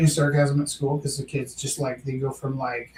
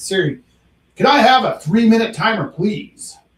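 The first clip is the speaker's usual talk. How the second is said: loud, pitched-up, puffed-up, projecting heroic voice; 7 semitones higher, 8 dB louder than usual. Speaker asks Siri for a timer, using a Superman voice. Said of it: "unless I use Superman voice".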